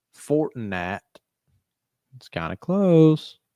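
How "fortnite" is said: massive, heavy country drawl, very thick accent. Joking about how a word would sound with a country accent: massive country accent. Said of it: "with like a massive country accent".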